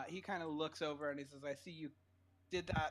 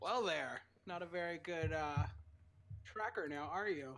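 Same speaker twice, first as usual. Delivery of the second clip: smug, self-satisfied, mocking and taunting character voice. Voicing an NPC who claps slowly at a player's tracking: smirking, taunting NPC. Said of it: "kinda got, like, a smirk on his face".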